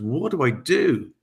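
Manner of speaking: acted, very slow, drawn-out, desperate and panicked. Recounting pleading with his guides amid the chaos, retelling own panicked plea. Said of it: "So I'm panicking".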